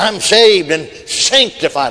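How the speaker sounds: slow, put-on defiant, challenging delivery. Retelling how old man Smith testified in church: imitating a challenging testimony. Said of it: "like he's challenging folks".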